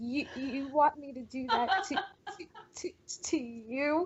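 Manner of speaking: put-on trembling voice. Retelling what a guy asked in the speaker's bedroom, imitating a quivering voice. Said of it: "his voice was physically quivering".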